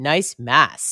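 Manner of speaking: put-on sarcastic tone. Retelling what a photographer said between sets; mock-sarcastic retelling. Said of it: "like sarcastically".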